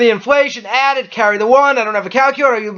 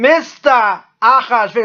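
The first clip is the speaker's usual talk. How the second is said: put-on, fake Boston accent. Retelling a story and saying a character's name; put-on boston accent. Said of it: "like that Boston accent".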